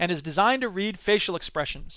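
plain

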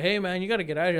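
ordinary talk

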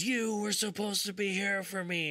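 play-acted shrill yell, pitched very high. Telling a story to a friend about a scary encounter, acting out what a woman yelled, imitating someone yelling. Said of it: "the lady pops up and she's yelling".

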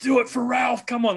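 shrill, very high, excited scream. Recalling shouting at the stage at a show, retelling own screaming. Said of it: "so I'm screaming".

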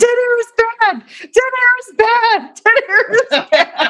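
very high scream repeated over and over. Retelling a crush running up the stairs: imitating someone screaming. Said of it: "he comes running up the stairs screaming".

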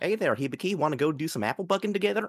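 high cartoon cowgirl voice. Asked to imagine her talking like Applejack, speaker does an Applejack voice. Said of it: "talking like Applejack from My Little Pony".

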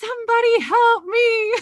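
mock, very high, loud yell through giggles. Telling how their little guy yelled, imitating a laughing yell. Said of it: "He's laughing and he's yelling".

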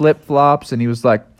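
plain reading voice

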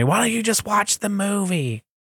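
gentle put-on yelling. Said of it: "my wife will yell at me".

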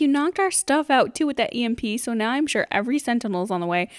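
normal talking voice

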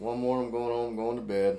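very low, soft, mopey droning monotone. Open the 150th show with your co-host, sounding like Eeyore. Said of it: "He's like Eeyore".

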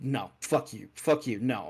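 ordinary talk

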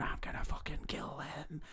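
eerie, creepy, tiny, barely whispered voice. Retelling a Harry Potter scene, the voice Harry hears in the walls: creepy little voice. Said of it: "he can hear this like creepy little voice going".

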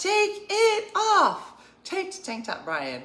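put-on shrill, very high, swooping shouting. Recalling a moment with family, quoting Nicole shouting at Brian, imitating Nicole yelling. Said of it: "Nicole just started yelling".

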